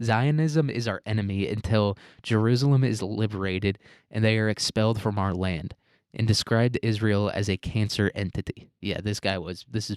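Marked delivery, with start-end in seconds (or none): none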